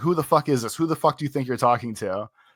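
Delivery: mock-angry shouting, angry outburst. Telling a phone-call story, acting out the uncle's words; imitating an angry uncle. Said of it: "my uncle gets real mad and goes".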